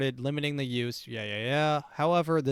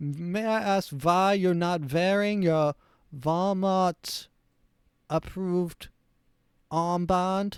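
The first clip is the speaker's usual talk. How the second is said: put-on German accent; 4 semitones higher than usual. Playing a Walmart employee asking to see your papers, mock Nazi German accent. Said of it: "this is supposed to be a Nazi accent".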